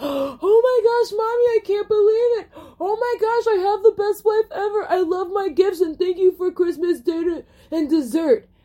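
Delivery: put-on very high, effusive, gushing thankful voice. Acting out a family thanking for holiday gifts: put-on gushing gratitude. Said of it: "I'm just anticipating this, like".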